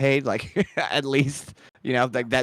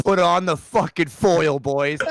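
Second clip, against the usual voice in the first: put-on rousing sports coach voice, pitched higher; 4 semitones higher than usual. Giving the team a pump-up speech before game four: Reggie Dunlop pep talk. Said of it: "I go straight Reggie Dunlop on them".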